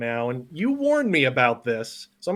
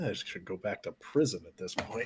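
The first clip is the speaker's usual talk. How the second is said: barely audible, low, very quiet grumbling mumble; 5 semitones lower, 12 dB quieter than usual. Voicing a groaning old character sitting up: mumbling to himself. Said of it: "he just sort of mumbles to himself".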